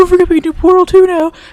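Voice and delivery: mock very loud, high-pitched, really happy excitement. Imitating Chrono's reminder about Portal two, Chrono impression, mock-excited and happy. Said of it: "That's my impression of Chrono, is just really excited and really happy".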